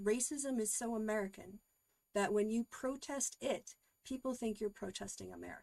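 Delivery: ordinary talk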